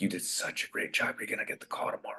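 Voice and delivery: very soft, barely voiced whispered aside. Retelling what the casting director said after the audition: retelling a whisper. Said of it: "she whispered to me".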